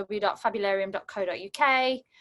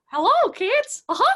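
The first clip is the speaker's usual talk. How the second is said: very high, squeaky American voice with twang; 7 dB louder than usual. Trying this voice out loud for the first time, greet the kids in a squeaky Mickey Mouse voice. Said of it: "Should we try Mickey Mouse?".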